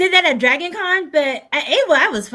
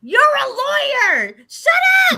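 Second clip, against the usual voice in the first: mock screaming, higher pitched; 10 semitones higher than usual. Imitating someone screaming at a convention: imitating someone screaming. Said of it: "please don't go around screaming".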